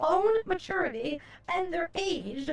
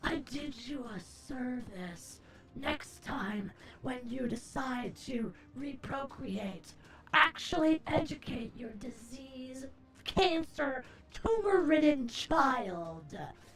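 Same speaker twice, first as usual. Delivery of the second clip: very cold, resonating voice; 3 semitones lower, 5 dB quieter than usual. Acting out a fantasy revenge speech to a player's parents: very cold, resonating voice. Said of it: "you say in a very cold, resonating voice".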